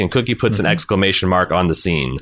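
normal talking voice

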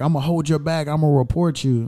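normal talking voice

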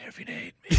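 whispered.

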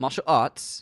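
attempted, fake put-on British accent. Repeating a phrase after being teased about how they said it, attempted british accent. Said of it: "I can't do the British accent with that voice".

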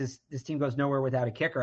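ordinary delivery

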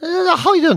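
high, put-on telephone voice. Guessing how a woman who puts on a voice sounds on the phone, imitating her put-on voice. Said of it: "It sounds a bit like that".

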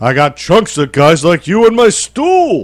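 high-pitched put-on voice with swooping, swinging intonation. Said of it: "That's my impression".

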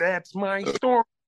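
very high, cartoon frog puppet voice. Listing the made-up voices in a gang vocal: Kermit the Frog voice. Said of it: "Kermit the Frog".

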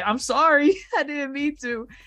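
put-on crying voice. Retelling a scene where a boy apologizes after a scolding: mock crying as Luffy. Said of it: "And Luffy's here crying".

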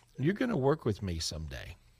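ordinary delivery

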